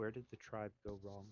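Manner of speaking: hushed, soft half-whisper, barely there. Voicing Coyote in humanoid form, looking up at a player character: Coyote half-whispering. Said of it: "it looks up at you and it whispers".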